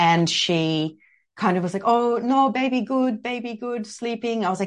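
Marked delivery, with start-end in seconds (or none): 1.8-4.4 halting, slow, high broken English. Retelling the mother's reply about the baby: imitating broken english. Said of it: "all of a sudden couldn't speak English".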